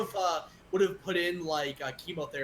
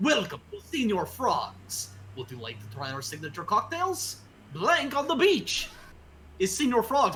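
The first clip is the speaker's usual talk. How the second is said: put-on Russian accent; 3 semitones higher than usual. Role-playing greeting customers at Senior Frogs, in a Russian accent. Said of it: "but I talk with Russian accent".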